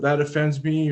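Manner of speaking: ordinary talk, nothing marked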